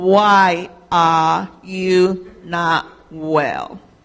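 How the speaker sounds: very slow, each word stretched and drawn out. Retelling speaking next to the ear of a father who cannot hear well, very slowly. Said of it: "And I to say very slowly".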